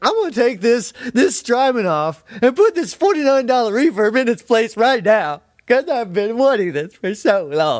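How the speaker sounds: obnoxious gushing voice, pitched way up high.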